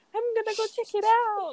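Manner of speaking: put-on very high-pitched girlish voice.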